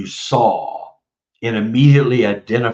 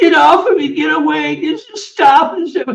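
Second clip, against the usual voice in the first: put-on very high, loud sobbing little-kid voice; 4 dB louder than usual. Retelling what was said under hypnosis: imitating own little kid voice sobbing. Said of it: "in a little kid voice, and I'm sobbing uncontrollably".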